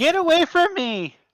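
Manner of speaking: shrill, very high-pitched woman's scream. Voicing a woman screaming from a few doors down: woman screaming. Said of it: "a woman screaming".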